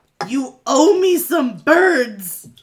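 very loud, high-pitched yelling. Shooting an acid arrow at an enemy: yelling in character. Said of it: "And I am going to yell".

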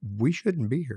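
ordinary talk

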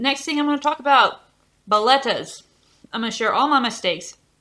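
speaking with food in mouth. Speaker moves on to the next tip for listeners, talking with mouth full. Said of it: "I have food in my mouth".

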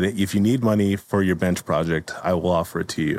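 ordinary delivery

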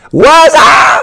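very high-pitched shout. Greeting the listeners at the start of the show: Martin impression. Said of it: "that's my best Martin impro-, impersonation".

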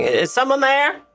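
put-on old woman character voice. Voicing a hidden shopkeeper calling out to the party: tiny old woman's voice. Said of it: "You hear a voice saying".

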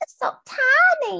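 very high, tiny, stretched, squeaky southern cartoon mouse voice. Speaker imitates what a girl said while holding someone's finger, a weird impression of a girl. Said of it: "That was a really weird impression".

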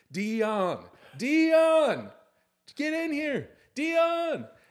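very loud, shrill, booming, high, drawn-out scream. Retelling how a player shouted for his brother when asked about him: retelling a scream. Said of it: "he just starts screaming".

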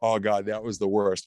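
plain

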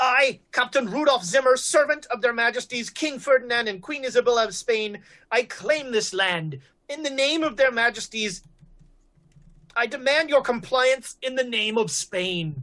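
raving, proclaiming put-on voice. Narrating a tabletop game, voicing a distant voice heard at night: raving voice. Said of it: "there is like a raving voice".

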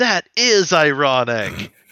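odd, awkward, acted-out delivery, said loud. Retelling own past words to a coworker: imitating own weird smiling delivery. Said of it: "stared at her with, like, a weird smile".

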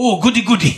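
mock, cartoonish, caricatured Japanese accent on every word. Saying a name the way they hear it in their head, stereotypical japanese voice. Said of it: "hearing it in a stereotypical, like, Japanese voice".

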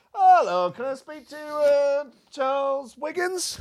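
very high, very slow, drawn-out, half-attentive voice. Retelling nuisance phone calls, imitating a distracted cold caller. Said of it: "they always sound like they're doing something else".

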